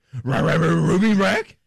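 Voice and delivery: rough, creaky, growling cartoon dog voice. Imitating another speaker's stammer as a Scooby-Doo voice. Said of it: "That's what he just hit me with that".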